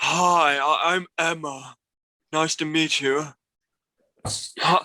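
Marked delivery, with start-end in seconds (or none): 0.0-3.2 put-on female voice, still manly-sounding. Imitating how Emma Stone says hi: manly Emma Stone impression. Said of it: "a manly voice impression".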